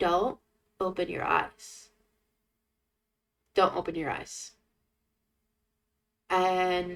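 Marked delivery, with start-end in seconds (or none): 0.0-4.5 tiny, small, hushed inner voice. Recounting lying in the dark as a little voice in their brain speaks, tiny little inner voice. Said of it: "just a little, little, little voice goes".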